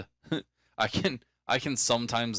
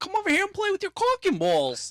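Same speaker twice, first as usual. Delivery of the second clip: very high, squeaky, swooping New York voice; 4 dB louder than usual. Recalling a comedy bit, Adam Sandler voice, somewhat New York accent. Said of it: "somewhat New York accent going on with it".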